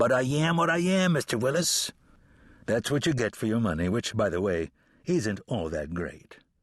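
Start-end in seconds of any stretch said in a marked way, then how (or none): 0.0-1.9 sudden, pitched-up, high cartoon voice. Answering a complaint about attitude, in a Popeye voice. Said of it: "I slipped into my Popeye voice".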